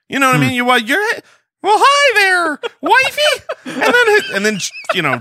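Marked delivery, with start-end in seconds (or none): 1.8-4.3 put-on cartoon mouse voice, much higher, slower. Acting out greeting the wife, Mickey Mouse voice. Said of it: "you sound like Mickey Mouse".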